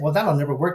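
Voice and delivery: ordinary talk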